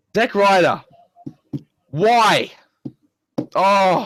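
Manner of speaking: exasperation turning to anger. Talking about Zack Ryder while trying hard not to swear, getting angry. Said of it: "I'm getting angry".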